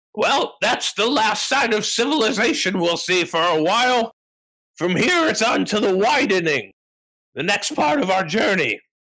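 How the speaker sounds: calling out loudly. Voicing a character who calls out to the traveling party: yelling out. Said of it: "Scramony kinda yells out".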